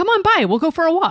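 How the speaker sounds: Wisconsin accent. Reply to someone who likes the walks around their new spot, in a Wisconsin accent. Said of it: "Is that the Wisconsin accent you did?".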